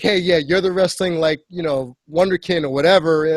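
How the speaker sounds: plain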